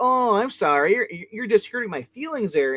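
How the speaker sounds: high, jeering, taunting trash talk. Retelling a fight scene, imitating Robin's trash talk. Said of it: "Robin just, just, just trash talks".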